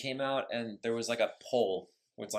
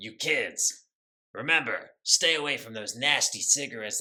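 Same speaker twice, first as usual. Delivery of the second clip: raised, lecturing voice; 5 dB louder than usual. Joking about a character warning kids at a pep rally: Smoke warning kids about smoking. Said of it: "Smoke would be like Rob Reiner... he's just like".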